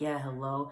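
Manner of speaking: all-sweet, tender, caring-sounding voice. Retelling a phone call answered on speaker: imitating Harry sounding sweet and caring. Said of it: "trying to sound all sweet and caring".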